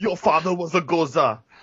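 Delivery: put-on strongman voice, pitched high, laid on thick. In a father-and-son skit, the father speaks in Schwarzenegger voice. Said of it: "Why are you talking in a Schwarzenegger voice?".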